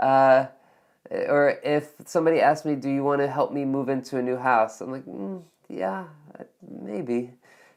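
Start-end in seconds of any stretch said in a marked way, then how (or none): 5.0-7.3 unenthusiastic, noncommittal, reluctant and hesitant tone. Answering a request to help someone move house, sounding reluctant. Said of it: "my tone of voice, you can tell that I'm not too crazy about it".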